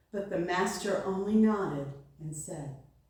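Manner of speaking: usual speaking voice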